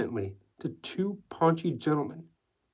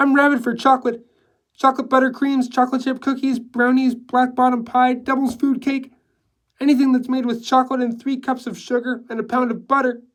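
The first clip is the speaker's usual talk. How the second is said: high-pitched, level, slightly loud monotone chatter; 9 semitones higher, 8 dB louder than usual. Reading Hixie's lines as she sips champagne, high-pitched monotone chatter. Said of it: "chattering in a high-pitched monotone".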